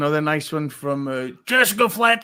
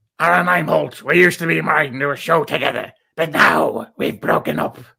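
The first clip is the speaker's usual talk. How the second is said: rasping, rough, creaky put-on voice; 3 dB louder than usual. Asked on air for your best April voice impression, doing the April voice impression. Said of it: "give me your best April voice impression".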